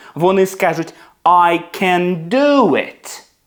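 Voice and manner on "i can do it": heavy stress on do, can said lightly. Explaining that the verb after can gets stressed: stress on do. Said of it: "вони зроблять акцент на наступне дієслово після can".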